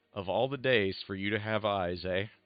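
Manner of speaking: dry, flat, sardonic deadpan sarcasm. A character looks at a companion and remarks, in sardonic deadpan. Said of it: "with complete just sardonic deadpan".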